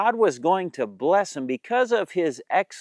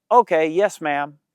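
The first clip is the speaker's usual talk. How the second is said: friendly, slower pace. Showing a good attitude when told to take out the trash, friendly voice. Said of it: "say yes, ma'am with a friendly voice".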